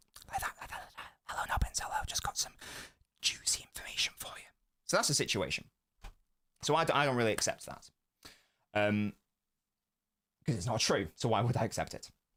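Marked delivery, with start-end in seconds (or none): 0.3-4.4 soft, murmuring whisper. Speaker acts out the Pep Guardiola poster whispering into his ear: Pep Guardiola whisper impression. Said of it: "he whispers them like that".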